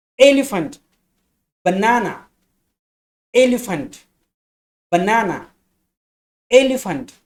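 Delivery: drilled stress on "el", "na". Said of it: "the accent is on the first syllable".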